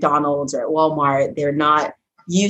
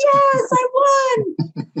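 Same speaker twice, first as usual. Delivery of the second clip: put-on very high, giddy, excited child voice, cheering. Retelling how kids reacted to winning prizes, imitating excited kids. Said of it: "they're jumping up and down like".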